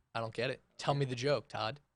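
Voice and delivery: low, level, expressionless deadpan. Retelling how a wife reacted to a joke: imitating someone deadpan. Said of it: "she was very deadpan".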